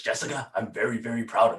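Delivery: comic-book superhero voiceover narration voice. Retelling the voiceover Batman recorded on their phone, in the Batman voice. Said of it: "doing this voiceover in the Batman voice".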